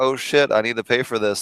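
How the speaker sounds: ordinary talk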